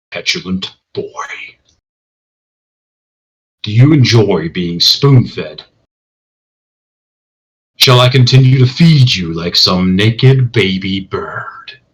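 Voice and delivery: firm, strong, steady voice. A voice addresses the boy in a strong booming baritone. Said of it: "strong, booming baritone".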